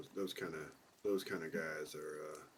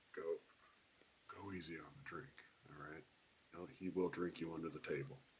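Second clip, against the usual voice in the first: rapid, very quiet, barely audible half-whisper; 10 dB quieter than usual. In a role-play game, a character half-whispers to a party member as she wakes: half-whispering. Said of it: "she'll kind of whisper to her".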